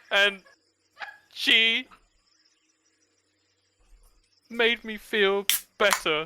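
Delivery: very high, faltering voice trailing off. Game master voices the disembodied voice as it starts up again: voice fading away. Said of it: "the voice kind of dies a little bit".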